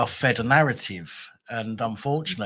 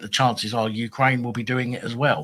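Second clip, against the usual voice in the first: ordinary delivery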